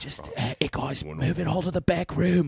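loud put-on Australian accent. Joking about how Australia would react to a global alcohol ban, in an Australian accent. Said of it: "if I can do an Australian accent".

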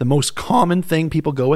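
voice breaking and cracking up high mid-phrase. Introducing the most common theory, voice cracking. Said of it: "did you hear my voice crack there?".

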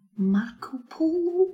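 put-on very high Scottish accent with rolled r. Repeating how the other speaker's Dundee mum says it: imitating a mum's Scottish accent. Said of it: "it's almost like she's in the room".

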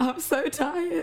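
crying, tearful voice pitched very high. Woman speaking to listeners while actually crying. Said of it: "she's actually crying".

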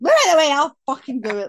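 screaming at full volume, very high and swooping. Retelling getting up to find someone struggling with the grill: imitating own screaming. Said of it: "Like, screaming".

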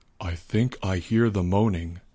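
hushed, low, soft half-whisper. Albert half-whispers while Leo describes the infected outside. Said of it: "whispered Albert".

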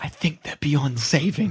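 theatrical whisper. In a role-play, a freed man speaks to the player's character: whispering. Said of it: "he whispers to you".

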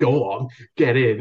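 acted, re-enacted shout. Retelling watching his 9-iron shot roll toward the hole, retelling shouting at his golf ball. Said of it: "I literally started shouting".

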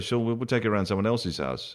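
ordinary delivery

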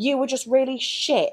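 ranting delivery. Retelling the sister going mental on the phone: imitating angry sister. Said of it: "absolutely mental at me".

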